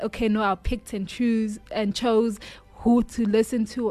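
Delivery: normal talking voice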